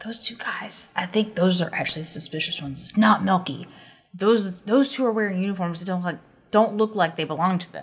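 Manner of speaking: confiding, secretive stage whisper. Voicing a character who leans in to warn the others: whispering. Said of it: "Ron kinda leans in and whispers".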